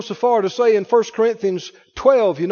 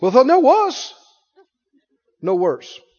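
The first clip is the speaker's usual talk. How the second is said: imitated South African accent; 3 semitones higher than usual. Retelling what a man said to him, in a South African accent. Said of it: "South African accent".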